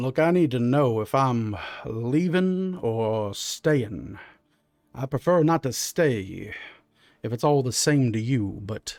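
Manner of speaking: put-on deep drawling Southern accent. A figure on a boat in the darkness speaks up, in a deep southern drawl. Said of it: "You hear this like really deep Southern drawl".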